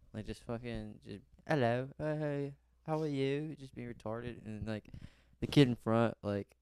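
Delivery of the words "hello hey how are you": slow, silly put-on English accent. Goofing around with another kid on the school bus, in a put-on English accent. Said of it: "saying English accents to each other".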